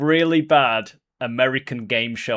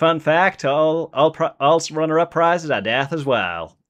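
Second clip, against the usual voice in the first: put-on American southern accent; 4 semitones higher than usual. Urged on by a co-host, the speaker retries the accent: attempted southern accent. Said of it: "whether I can do that accent any better".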